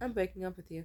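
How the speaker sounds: ordinary talk, nothing marked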